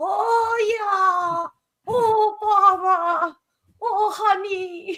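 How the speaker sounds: very high, squeaky, badly done cartoon bear voice. Describing a New Year scene with a sick man crawling out, Winnie the Pooh voice. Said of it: "in a Winnie the Pooh voice".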